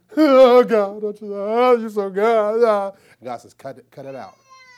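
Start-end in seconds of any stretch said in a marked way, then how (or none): 0.2-3.0 mock weepy, high, tearful, sobbing voice. Speaking of people who only cry when they pray, imitating crying while praying. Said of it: "all they do when they pray is cry".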